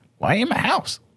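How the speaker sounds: very high little goblin creature voice. Narrator voicing a goblin who finds the players in his house: goblin creature voice. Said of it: "And he's just like".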